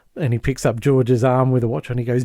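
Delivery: ordinary delivery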